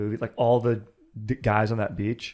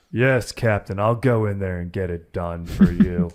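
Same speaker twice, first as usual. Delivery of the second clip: perfectly heroic, brave, loud raised voice; 5 dB louder than usual. Friend asks how a movie character talked; speaker answers with a heroic Dick Best impression. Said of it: "just like perfectly heroic".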